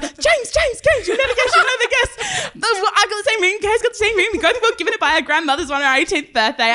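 mock excited voice. The speaker retells Caitlin running up to James, imitating her excitement. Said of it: "gets all excited and runs".

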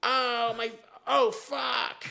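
mock loud exclamation. Retelling what a man said after he hit his face: imitating a loud outburst. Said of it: "he said it, like, loud like that".

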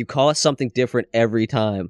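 normal talking voice

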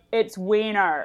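loud, flat, blunt, matter-of-fact tone. Retelling how a new classmate corrected the teacher at roll call: imitating a loud deep alto. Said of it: "very loudly with her, ... a deep alto from the back of the classroom".

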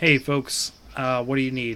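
flat-voiced impression. Imitating a man who stepped forth with the mayor, imitating a flat voice. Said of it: "sort of like flat voice".

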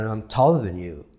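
ordinary delivery

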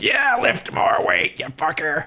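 put-on old, out-of-shape coach voice, high-pitched and slow. Imitating an old, out of shape person urging on a lifter: imitating an old out-of-shape trainer. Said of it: "an old, super out of shape person that's just being like".

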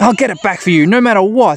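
high-pitched cartoon creature voice. Narrating a scene to listeners, voicing Patamon's line in Patamon voice. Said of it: "says Patamon".

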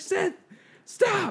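mock very high, screaming scolding cry. Retelling how she yelled at a student walking through: imitating a teacher screaming. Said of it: "screaming at him".

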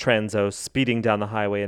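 plain

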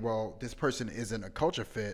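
normal talking voice

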